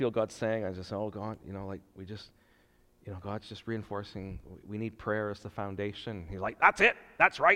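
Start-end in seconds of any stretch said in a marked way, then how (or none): 6.6-7.6 shrill, very high, loud put-on voice. Recounting what Don Smith says about prayer as the foundation: Don Smith imitation. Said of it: "So that's my Don Smith imitation".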